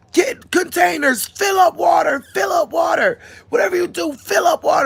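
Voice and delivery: mock, very high, screamed shouting. Retelling a disaster, ordering family to collect water: retelling a scream at family. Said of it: "I'm screaming at my family".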